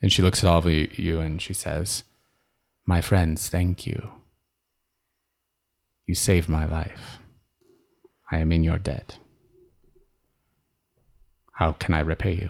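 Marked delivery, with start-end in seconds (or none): 2.8-12.5 calm, settled, composed, grateful tone. A scratched-up stranger turns to the whole group and speaks, calm. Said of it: "She has this very calm turn".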